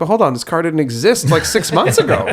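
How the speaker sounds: put-on sarcastic voice. Retelling own reply to a dealer rep: imitating own sarcastic reply. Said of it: "a sarcastic".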